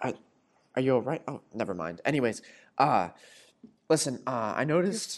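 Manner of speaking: freaking out, panic barely held back. Jackson comes over to ask the director a question, freaking out. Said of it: "he's clearly, like, freaking the fuck out".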